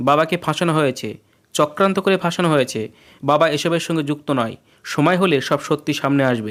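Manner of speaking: usual speaking voice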